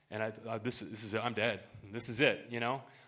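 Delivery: ordinary delivery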